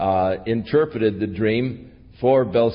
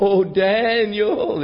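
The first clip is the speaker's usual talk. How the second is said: put-on, very high, mournful, drawn-out wailing cry; 10 semitones higher than usual. Storyteller voices the king calling out to Daniel in the morning, lamenting cry. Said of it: "he cried in a lamentable voice".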